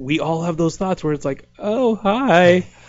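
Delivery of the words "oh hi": voice cracking, high and loud. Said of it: "my voice is still cracking".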